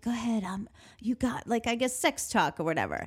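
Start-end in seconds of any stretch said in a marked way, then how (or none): 0.0-1.5 put-on whispering voice. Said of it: "whispering things like".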